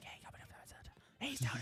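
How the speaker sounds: imitated whispering. Retelling hearing voices in a dark room: imitating whispering. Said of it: "And then I hear whispering".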